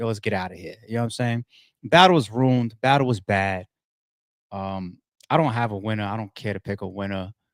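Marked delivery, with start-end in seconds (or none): 0.0-0.8 put-on mumbling, lower and quieter. Retelling two battle rappers talking on the mic mid-battle: imitating a mumble. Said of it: "they both kinda mumbling".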